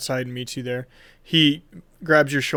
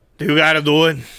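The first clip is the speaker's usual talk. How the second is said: loud, put-on New York wiseguy mobster accent; 2 semitones higher, 8 dB louder than usual. Joking while asking another player a question: New York mobster voice. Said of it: "She turned into a New York mobster".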